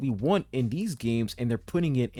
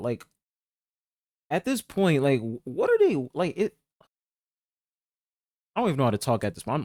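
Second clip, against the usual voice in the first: stuttering, tripping over the words, lost for words. Reacting to news of a social Animal Crossing game, stuttering, at a loss for words. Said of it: "I'm literally stuttering because I'm just I'm at a loss of words".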